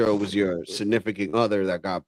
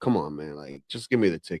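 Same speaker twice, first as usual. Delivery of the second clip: put-on aggravated, rude, impatient tone, lower and quieter; 4 semitones lower, 5 dB quieter than usual. Retelling complaining to an officer over a slow ticket: retelling an aggravated, rude tone. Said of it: "I did come off as, like, you know, a little bit rude".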